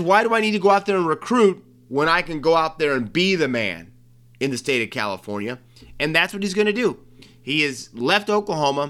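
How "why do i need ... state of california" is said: plain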